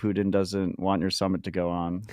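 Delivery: ordinary delivery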